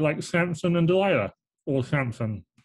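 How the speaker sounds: words spoken around chewed bread, mouth full. In a conversation, the speaker talks with a mouth full of bread. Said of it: "Sorry, mouthful of bread".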